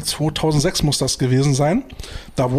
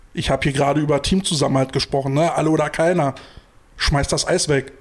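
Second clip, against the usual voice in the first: plain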